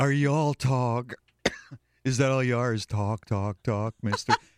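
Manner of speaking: put-on voice of a drunken woman. Retelling how women talked to him when single: imitating a drunken woman. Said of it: "You cannot reason with a drunken woman".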